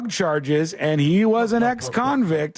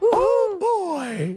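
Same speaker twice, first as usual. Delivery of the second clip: cartoon mouse voice, very high. Speaker does the exclamation again when a co-host asks, Mickey Mouse voice. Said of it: "I'm Mickey Mouse".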